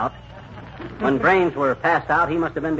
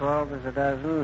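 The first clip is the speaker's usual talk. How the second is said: muttering under the breath. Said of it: "what are you muttering about?".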